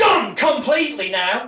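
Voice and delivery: sudden, loud, forceful shout. Demonstrating a pattern interrupt with an arm movement, shouted forcefully. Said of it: "I shout".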